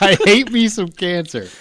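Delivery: put-on slow Indian accent. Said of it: "Why did he sound Indian when you did it?".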